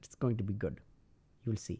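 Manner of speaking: put-on Indian English accent, laid on thick. Mocking developers reassuring internet users: put-on indian accent. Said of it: "I'm using the Indian accent".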